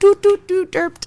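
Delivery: high mouth sound effect like a soundboard button. Imitating the sound of a button: imitating a sound button. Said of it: "I sounded just the same as you".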